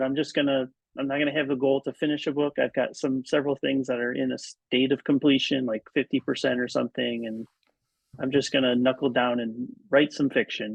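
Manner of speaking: ordinary talk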